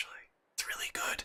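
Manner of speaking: barely voiced, very quiet, hushed whisper. Reacting to a good result in a game, whispering. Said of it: "I'll stop whispering".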